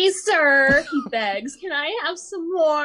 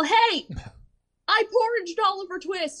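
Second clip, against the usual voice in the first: loud yell, pitched high; 5 semitones higher than usual. Retelling running out from the kitchen: retelling a yell. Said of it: "run out from the kitchen and yell".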